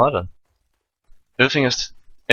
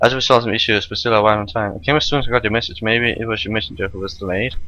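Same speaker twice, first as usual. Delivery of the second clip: usual speaking voice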